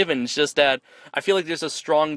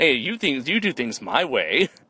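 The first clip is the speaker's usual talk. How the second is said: put-on sassy fairy voice. Describing the young fairy's manner to another speaker: sassy Maleficent voice. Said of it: "a sassy sort of way. She's like".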